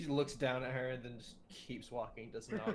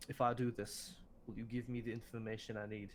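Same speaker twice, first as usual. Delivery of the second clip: hushed, quiet voice kept close; 2 semitones lower than usual. Player character leans in close to ask the queen something, hushed voice. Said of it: "in a hushed voice uh say".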